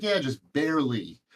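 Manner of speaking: acted, dry, sarcastic delivery. Retelling a reply to people asking about making a living: imitating own sarcastic reply. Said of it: "and sarcastic".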